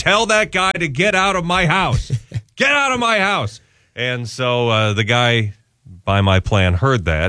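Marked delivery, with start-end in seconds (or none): 0.0-3.6 hollering hard, high raised yell. Recounting a phone call about an overpriced service, retelling yelling. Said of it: "I'm yelling on the phone going".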